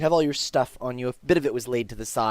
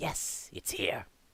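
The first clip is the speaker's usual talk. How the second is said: put-on snake voice, lower, quieter; 3 semitones lower, 12 dB quieter than usual. Game master voicing a second figure replying in the scene, Dex snake-person voice. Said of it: "It's a snake person".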